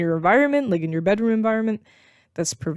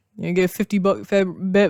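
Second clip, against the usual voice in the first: stumbling, stuttering over words. Speaker explaining temporary fixes to a listener, stuttering. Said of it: "I'm stuttering".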